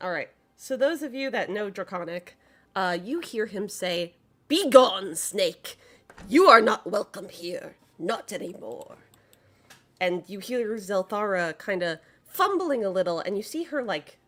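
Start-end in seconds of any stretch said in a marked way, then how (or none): 4.5-9.0 loud, gruff, barked delivery. Voicing an innkeeper who barks at an unwelcome guest: barking innkeeper voice. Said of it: "he barks out in Draconic".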